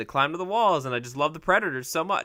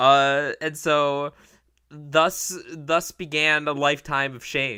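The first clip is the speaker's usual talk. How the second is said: ordinary delivery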